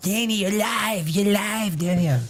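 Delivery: put-on soft cartoon kid voice. Show host telling his co-host that he's live; Eric Cartman voice. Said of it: "Eric Cartman voice".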